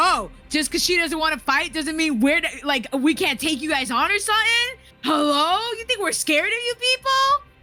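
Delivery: mad, defiant, angry tone, pitch rising. Voicing Lily, who gets mad at a threatening thug: angry in-character retort. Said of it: "Lily gets mad".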